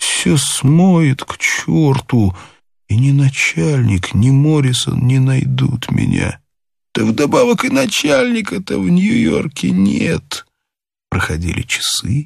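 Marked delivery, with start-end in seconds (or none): 0.0-10.5 slow, drawn-out, resigned, pitched high. A tied-up man watches the rain start falling, muttered with resignation. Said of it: "пробормотал он с какой-то покорностью судьбе".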